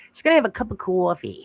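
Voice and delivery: put-on New Jersey accent. Speaker showing how some people say coffee, in a New Jersey accent. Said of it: "Isn't that like a New Jersey accident".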